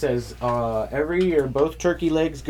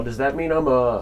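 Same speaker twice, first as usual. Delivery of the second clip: plain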